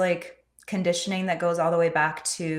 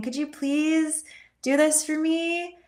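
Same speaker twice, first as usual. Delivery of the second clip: really squeaky, very high-pitched sweet voice; 11 semitones higher than usual. Showing how women ask for things to get their way, really squeaky voice. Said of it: "having a really squeaky voice and saying".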